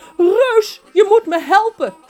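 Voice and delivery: very high, very loud woman's scream, pleading. Narrator reads a woman calling the giant on the phone, in a screaming woman's voice. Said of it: "een schreeuwende vrouwenstem".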